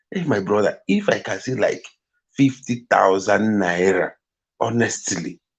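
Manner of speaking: plain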